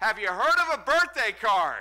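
very loud, high-pitched yell. Retelling calling after the guys who walked off, imitating own past yell. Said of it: "And I yell out".

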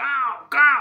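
high, slow caw like a crow. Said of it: "कौवे की आवाज़ निकल गई".

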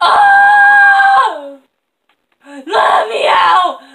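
high, loud, panicked scream.

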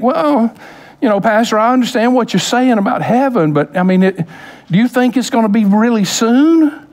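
a touch of disappointment, slightly let-down tone. Retelling what young people ask the pastor: imitating a disappointed voice. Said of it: "a little bit of, uh, disappointment in their voice".

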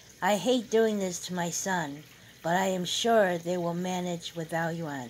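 ordinary delivery

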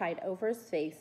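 plain

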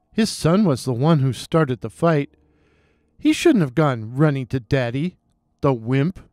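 plain

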